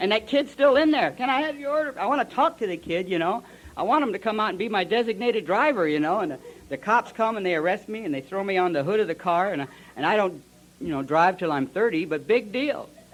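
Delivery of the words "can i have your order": very high, whiny little puppet voice. Retelling a drive-through puppet taking his order, in a whiny little puppet voice. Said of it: "he got that whiny little voice".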